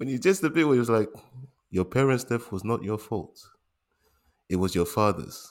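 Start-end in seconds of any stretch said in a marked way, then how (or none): none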